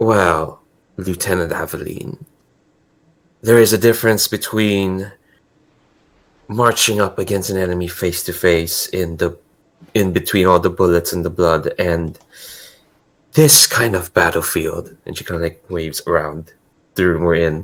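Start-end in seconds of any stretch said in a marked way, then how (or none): 0.0-15.0 in-the-know, insinuating, conspiratorial, confiding tone. [name] leans forward to address Lieutenant Aveline, in a conspiratorial tone. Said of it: "this like conspiratorial tone in her voice".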